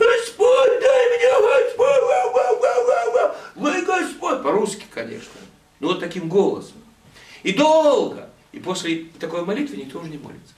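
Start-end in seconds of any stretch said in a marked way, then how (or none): 0.0-4.4 very high, slow, altered-voice howling. Speaker imitates an old woman praying aloud in a meeting: imitating a howling prayer. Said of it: "Буквально выть".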